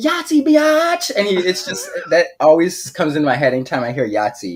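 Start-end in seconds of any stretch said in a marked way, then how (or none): 0.0-1.1 shrill, high, crowing, triumphant victory yell. Retelling a sitcom scene where Charlie wins Yahtzee: imitating Charlie's victory yell. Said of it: "he slams down".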